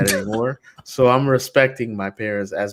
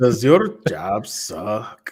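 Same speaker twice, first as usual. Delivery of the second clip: terrible, badly done put-on Mexican accent. Doing a job-site ad read as a joke, in a terrible mexican accent. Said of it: "That's a terrible Mexican accent".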